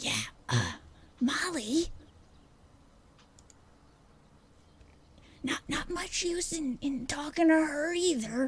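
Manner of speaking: whispered words. Voicing a man standing on tiptoe to get within range, whispering. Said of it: "I gotta whisper the words".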